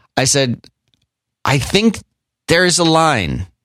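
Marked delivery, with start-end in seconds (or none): 1.5-3.5 plain, steady, conversational delivery, nothing added. Retelling what they once said, the speaker says it a little louder than normal. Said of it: "just a little louder than regular conversation".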